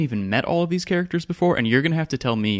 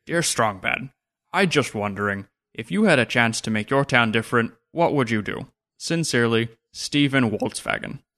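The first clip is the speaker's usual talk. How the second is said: put-on cartoon voice. Reading out an email addressed to him, in a Strong Bad impression. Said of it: "maybe I'll try my Strong Bad impression here".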